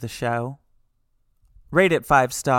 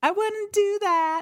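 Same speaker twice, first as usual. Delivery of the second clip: very high, tiny little ghost voice. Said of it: "a real tiny little voice".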